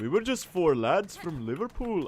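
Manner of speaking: put-on Liverpool accent. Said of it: "I can't really do the Beatles accent".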